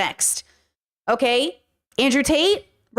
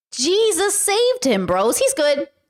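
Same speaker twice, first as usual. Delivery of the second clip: high, slow, drawn-out sarcastic tone. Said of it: "I'm using sarcasm".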